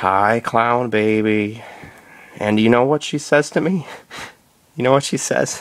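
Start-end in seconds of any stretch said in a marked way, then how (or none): 0.0-1.6 slow, creepy, crawling, drawn-out drawl. Answering a phone call, the speaker greets the caller in a slow, creepy drawl. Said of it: "say in a slow, creepy crawl drawl".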